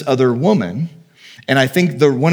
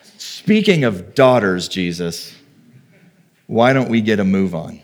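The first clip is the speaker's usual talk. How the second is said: heavily ironic, pointed tone; 6 semitones lower than usual. Acting out Jairus urging Jesus to hurry: ironic hint as Jairus. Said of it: "I'm catching the irony and going".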